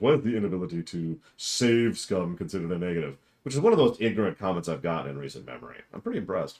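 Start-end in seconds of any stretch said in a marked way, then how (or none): 0.0-3.2 mocking, dopey, dim-witted dumb voice. Quoting someone's comment to mock it; really dumb voice. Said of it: "I'm going to say this in a really dumb voice".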